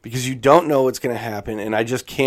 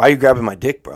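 loud, put-on, hard, street-tough guy voice; 5 dB louder than usual. Retelling a fight, quoting one of the guys in a tough guy voice. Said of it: "tough guy voice".

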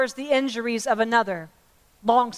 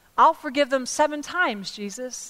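ordinary talk

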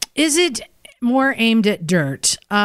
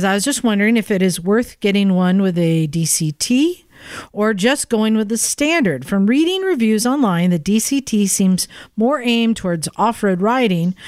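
plain

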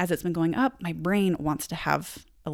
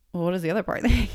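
put-on, mock-casual, nonchalant tone. Retelling how he phrased his question, imitating a nonchalant remark. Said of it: "he was so nonchalant with the way he said it".

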